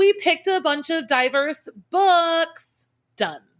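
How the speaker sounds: high-pitched, slow, dripping with sarcasm.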